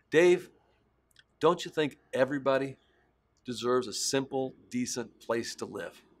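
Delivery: heartfelt, earnest, deeply convinced delivery. Retelling a question from the founder of Habitat for Humanity: imitating someone speaking with conviction. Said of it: "the way he said it with such conviction".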